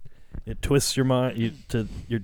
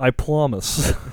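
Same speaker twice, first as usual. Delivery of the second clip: loud, convincing put-on English accent; 3 semitones higher, 5 dB louder than usual. Mocking someone's promise, repeating it in an English accent. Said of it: "that was a great English accent".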